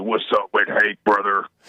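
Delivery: very low, mock, put-on macho voice.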